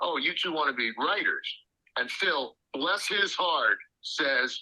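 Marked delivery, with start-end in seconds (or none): none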